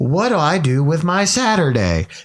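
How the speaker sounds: text-to-speech voice. Speaker, complaining to friends about TikToks, does the TikTok text-to-speech voice. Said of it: "But that TikTok voice".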